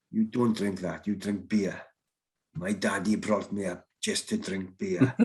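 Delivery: put-on South African accent with Afrikaans sound. Retelling what a man said after someone bought you shots, use a very broad Afrikaner accent. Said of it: "in his very broad Afrikaner accent".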